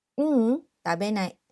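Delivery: ordinary talk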